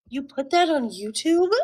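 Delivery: mock frightened, fearful, alarmed tone. Retelling what another speaker asked: imitating a fearful voice. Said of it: "the fear in his voice".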